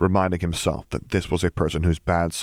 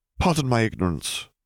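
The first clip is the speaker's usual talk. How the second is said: hesitant, careful, tentative, pitched-up delivery; 5 semitones higher than usual. Piet, after watching a few minutes, speaks up to her, tentatively venturing. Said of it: "Piet ventured".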